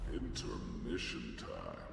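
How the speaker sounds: deep, very low, sultry voice. Announcing an intermission: deep, sultry voice. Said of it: "Deep, sultry voice".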